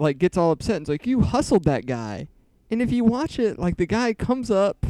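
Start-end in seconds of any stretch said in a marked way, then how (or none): none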